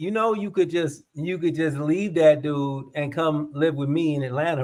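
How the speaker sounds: ordinary talk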